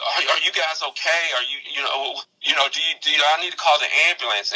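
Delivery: out of breath huffing. Retelling a worried phone call from the sports editor, imitating someone out of breath. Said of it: "He was huffing and puffing on the phone".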